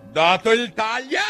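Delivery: very high, shrill, piercing shrieked scream. Narrator reads the queen's order to the soldiers, screaming. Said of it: "Urlò la regina".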